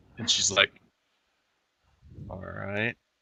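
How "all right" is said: very quiet, low, throaty, hushed growl. Voicing a character answering with suppressed anger: low growl. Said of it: "Just this low growl in the back of her voice".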